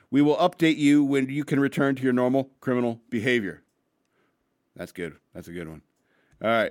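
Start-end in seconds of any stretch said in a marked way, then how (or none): none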